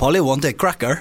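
put-on Scottish accent gradually sliding into a French accent. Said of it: "Is he French?".

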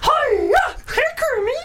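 high puppet-like voice. Speaker showing off voice impressions to others, Miss Piggy impression. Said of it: "then it goes a bit Miss Piggy".

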